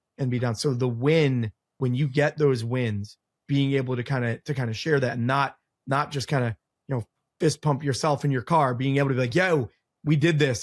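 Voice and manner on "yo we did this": put-on thick, strong Philadelphia accent, drawn out. Describing sharing a win with the team: strong Philly accent. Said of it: "my Philly accent really popped through there".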